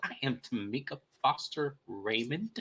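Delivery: slow, superior, self-important, entitled tone. Retelling how Tamika introduced herself: imitating Tamika's entitled tone. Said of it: "It was the way she said it in her tone".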